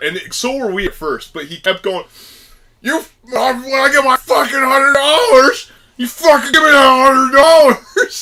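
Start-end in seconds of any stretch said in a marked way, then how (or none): 2.8-8.2 mock crazed, loud, high-pitched ranting yell at full tilt. Retelling what a man at a gas station kept yelling: imitating a man yelling. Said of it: "this dude is still yelling".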